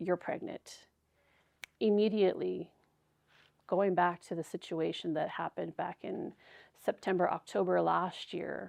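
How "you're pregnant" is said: whispering, quieter than surrounding speech. Recounting the news a doctor gave the speaker, retelling his whisper. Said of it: "he whispers to me".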